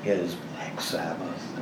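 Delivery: whisper.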